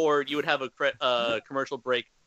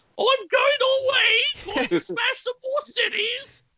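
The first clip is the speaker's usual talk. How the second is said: mock British accent, higher and louder; 5 dB louder than usual. Voicing Godzilla as the Queen for laughs: put-on British accent. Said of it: "All us British people talk like this".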